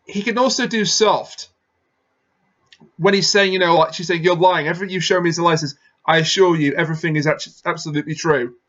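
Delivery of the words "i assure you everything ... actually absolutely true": ordinary delivery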